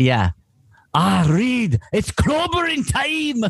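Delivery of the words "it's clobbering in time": Scottish accent, pitched very high. A speaker shows how he would voice the Thing, Fat Bastard Scottish voice. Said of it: "He reads Scottish".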